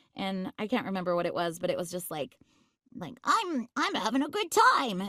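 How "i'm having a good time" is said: very slow, high, put-on little boy voice. Retelling reading lines for them, in a little boy voice. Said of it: "in my little boy voice".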